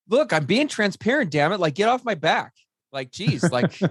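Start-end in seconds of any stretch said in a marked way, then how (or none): 0.1-2.5 defensive, snapping, pitched-up outburst. Retelling snapping at a wife about being transparent: imitating own defensive outburst. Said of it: "I remember I do this multiple times with my wife".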